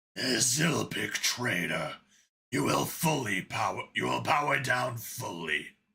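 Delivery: rasping, gravelly, angry insect monster voice. Reading a story aloud, voicing an angry bug over a headset: gravelly, deep bug voice. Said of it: "His gravelly, deep voice that could only belong to an angry bug".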